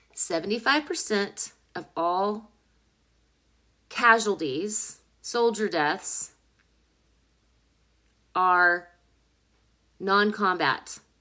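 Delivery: slow, very clear careful diction, each word spelled out. Repeating statistics so listeners can digest them: speaking very clearly. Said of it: "I'm gonna speak very clearly here".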